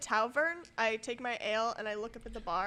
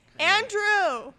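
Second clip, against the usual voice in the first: shrill, very loud, high-pitched yell; 10 semitones higher, 11 dB louder than usual. Calling out to someone at the bar in character: yelling a name across a bar. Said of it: "Why are you yelling at stranger?".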